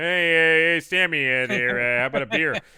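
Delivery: loud, casual calling out. Recapping a movie scene, imitating an actor ordering a beer: John Ratzenberger impression. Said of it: "you got Ratzenberger there going".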